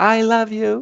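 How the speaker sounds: put-on very high, sweet, tiny little-girl voice. Telling a story, quoting Stan's little daughter in a sweet little girl voice. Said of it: "So in her sweet little voice".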